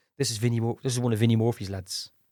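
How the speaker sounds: ordinary talk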